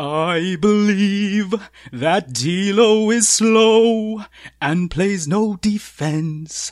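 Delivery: every word over-enunciated. Speaker does an impression of the person addressed: over-enunciated Pete Zayas impression. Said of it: "here's my impression of you".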